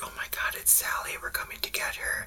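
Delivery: hushed, barely audible tiny-creature whisper. Describing small basement creatures whispering to a girl: imitating creatures whispering. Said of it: "they're whispering to her, like".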